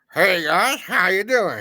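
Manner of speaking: put-on weird little cowboy accent. Mimicking how Dusty greeted his friends, in Dusty's weird cowboy accent. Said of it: "that weird little cowboy accent he put on".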